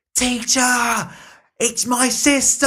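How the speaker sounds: very high, drawn-out scream at full volume. Retelling a film scene where a girl spots her sister: imitating a scream at top of lungs. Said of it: "screams at the top of, of her lungs".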